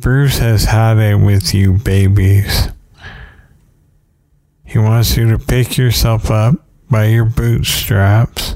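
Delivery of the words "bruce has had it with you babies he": ordinary delivery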